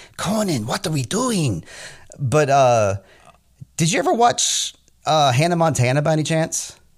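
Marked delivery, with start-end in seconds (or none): 0.2-1.7 put-on animated cartoon character voice. Imitating how an actor talks: Ren from Ren and Stimpy voice. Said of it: "talks like Ren from Ren and Stimpy".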